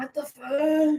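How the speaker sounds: acted dazed, high stoned drawl, fuck stretched out. Voicing a cat who looks stoned with one eye open: voicing a stoned-looking cat. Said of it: "is kind of like".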